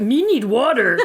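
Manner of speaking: high-pitched puppet monster voice. Quoting a woman who came in to empty her mop bucket, Cookie Monster voice. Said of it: "She was like Cookie Monster for a second".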